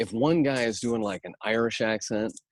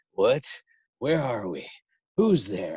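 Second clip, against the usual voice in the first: put-on doddering old man voice. Recalling a bit from his show tonight, doddering old man voice. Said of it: "doddering old man characters".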